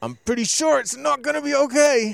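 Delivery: very high, very loud speech through clenched teeth. Recalling how he answered his worried friends while strangling the elk, retelling through gritted teeth. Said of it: "through gritted teeth I keep telling them".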